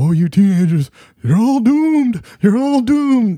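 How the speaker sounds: very high cartoon voice. Imitating a movie character warning of doom: Crazy Ralph impression. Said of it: "Crazy Ralph walked out of".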